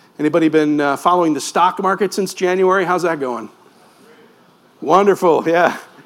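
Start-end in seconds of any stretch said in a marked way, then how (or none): 4.8-5.8 tongue-in-cheek, sarcastic, ironic tone. Asking the audience how the stock market is going: sarcastic. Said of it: "We got the sarcasm".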